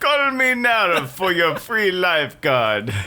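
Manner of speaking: put-on Jamaican accent, slow and high, radio ad style. Recalling an early commercial he voiced, in a Jamaican accent. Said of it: "I am talking in a Jamaican accent, like".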